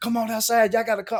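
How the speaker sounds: put-on hysterical yelling. Retelling how a brother and uncle came running into the house, retelling hysterical yelling. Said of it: "they were just yelling like hysterical".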